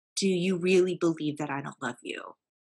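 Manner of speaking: put-on earnest, weighty, firm, serious tone. Retelling a question once put to Mom: retelling own firm, serious question. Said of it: "I said it very firmly and very seriously".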